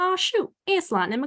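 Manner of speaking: put-on Southern accent. Showing how to start the Southern accent by repeating Larry the Cable Guy: Larry the Cable Guy Southern accent. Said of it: "just repeat everything Larry the Cable Guy says".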